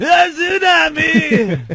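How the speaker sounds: over-the-top, high, slow wail, stretched out big.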